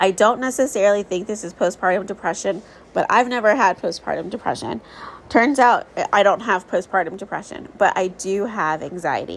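ordinary talk, nothing marked

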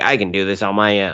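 drawn-out whining voice. Recapping the episode where Anakin meets Kenobi's clone troopers, in a whiny Anakin voice. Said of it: "I don't know why I went to Emperor voice for Anakin, but that's my whiny Anakin voice".

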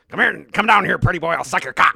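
very loud, goofy cartoon teen voice, yelled. Quoting a movie line among friends, the speaker ends up sounding like Beavis. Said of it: "You really sounded like Beavis when you said that".

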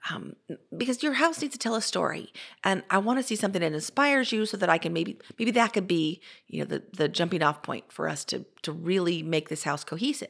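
ordinary talk

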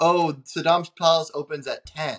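plain

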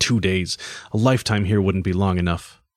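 ordinary delivery

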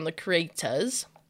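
put-on British accent. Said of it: "Why'd you get British?".

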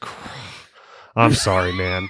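put-on, very slow, totally deflated voice. Retelling how the cop apologized after learning there was no stop sign: imitating a deflated apology. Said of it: "totally deflated".

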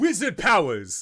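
high, loud, shouted put-on battle yell. Playing a character who throws a wind javelin, yelling in character. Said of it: "he throws a javelin while he yells".

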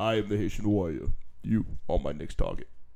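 very low, deep, mechanical cyborg-like robotic voice. During a joking back-and-forth among several speakers, doing a Terminator voice. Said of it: "Now you sound like the damn Terminator".

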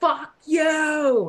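panicked high scream, last word "you" stretched. Recounting what she yelled in a shame-spiral panic, retelling a scream. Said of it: "So I scream".

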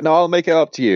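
loud, high insincere sarcasm. Retelling a show scene where Archer lies first: imitating Archer's sarcastic lie. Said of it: "sarcastically lie first".

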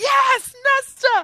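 put-on very high, very loud, excited squealing yell. Acting out fans changing their minds after Silver Flames, retelling an excited cheer. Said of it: "and then it's like".

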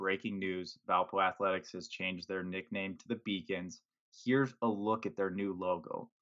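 ordinary talk

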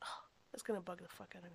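fast, soft whisper, as if to herself.

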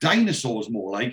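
usual speaking voice

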